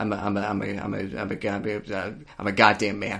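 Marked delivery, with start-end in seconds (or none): 2.4-3.2 grave, heartfelt, serious, sincere delivery. Declaring it after reaching out without permission: mock serious and sincere. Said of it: "You sound so, so serious and sincere about that".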